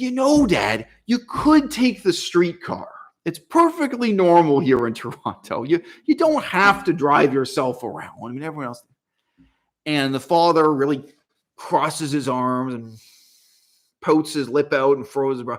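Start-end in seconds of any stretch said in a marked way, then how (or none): 0.0-8.8 put-on high, sing-song, swooping little-kid voice. Retelling a son urging his old father to ride the streetcar: imitating a childish voice. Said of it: "He lapses into a childish voice".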